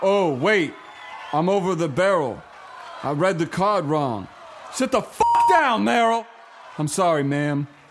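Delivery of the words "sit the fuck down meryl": snappy, sharp outburst with pitch pushed up. Performing a skit presenting an award, correcting a winner: snappy outburst. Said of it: "That sounded snappy".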